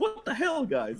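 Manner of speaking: very high-pitched, squeaky outburst. Imagine Kaz suddenly appearing in his chair on the show, and speak in a Kaz impression. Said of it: "That's my Kaz impression".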